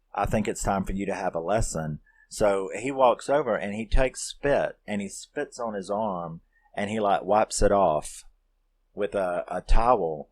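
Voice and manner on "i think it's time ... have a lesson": usual speaking voice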